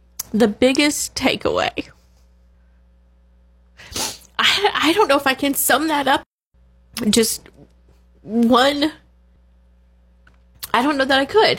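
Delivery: crying while talking. Answering a question about the biggest takeaway of eight years, crying while talking. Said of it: "I'm not sure why I'm crying".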